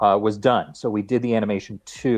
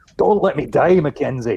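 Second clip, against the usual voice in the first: somewhat Scottish voice, pitched up; 5 semitones higher than usual. Recalling a somewhat Scottish voiceover character: somewhat Scottish accent. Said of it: "a somewhat Scottish guy in The Long Dark".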